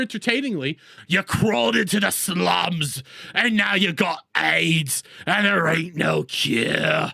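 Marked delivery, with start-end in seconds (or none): 1.1-7.1 low, playfully menacing, entertaining taunting delivery. Showing how a line could be delivered better; menacing and entertaining. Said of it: "I could say it so much more menacing".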